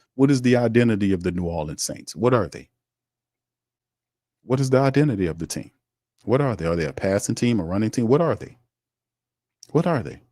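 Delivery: normal talking voice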